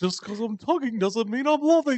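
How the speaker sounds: very high, loud, silly put-on goofy voice. Asked to say it again in their goofy voice, in a goofy voice. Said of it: "Do it in your goofy voice".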